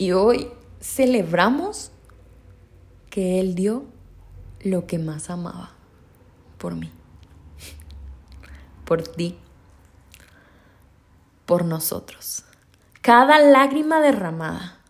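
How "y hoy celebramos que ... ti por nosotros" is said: breaking voice, lower, quieter. Speaker addressing listeners, voice breaking with emotion. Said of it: "se me quiebra un poquito la voz".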